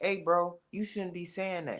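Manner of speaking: soft, quiet put-on male voice. Imagining how David would have said it, in a soft voice as David. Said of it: "y'all putting this soft voice".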